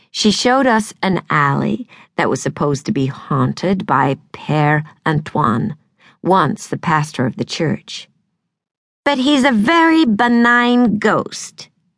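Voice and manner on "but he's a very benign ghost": strained, high-pitched, slow delivery. Reading a tour guide's line about a ghost: high-pitched, strained voice. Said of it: "in a high-pitched, strained voice".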